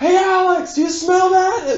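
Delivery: very high-pitched, half-shouted yell. Retelling calling back to someone while skiing downhill: retelling a yell. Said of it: "I'm sort of yelling as I'm going down".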